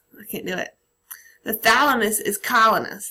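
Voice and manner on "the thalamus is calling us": attempted Boston accent, louder. Recalling a student's request to explain it in a Boston accent, attempted Boston accent. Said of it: "talk about it in a Boston accent".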